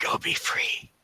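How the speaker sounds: hushed whisper. Voicing a character who casts invisibility on an ally: whispering. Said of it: "And he just whispers".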